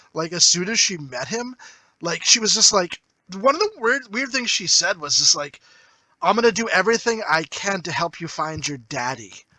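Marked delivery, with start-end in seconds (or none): 6.2-9.3 mimicked breathy delivery. Retelling a line a movie character said to him: imitating a breathy voice. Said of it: "she said it breathy, like, all breathy".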